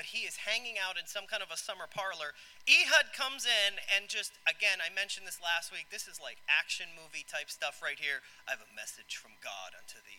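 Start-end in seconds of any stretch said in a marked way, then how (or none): 8.4-10.2 deep, hushed, dropped-low announcer voice like trailer voiceover. Retelling the story, the speaker voices Ehud delivering his message: deep movie announcer voice. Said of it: "he's got to have this like deep movie announcer voice".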